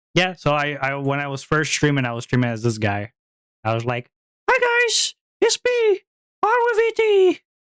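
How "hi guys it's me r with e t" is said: very high, slow, drawn-out put-on streamer persona voice. Recalling early days of streaming as a persona, in a put-on higher-pitched voice. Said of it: "I did talk with a higher pitched voice".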